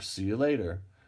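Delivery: ordinary delivery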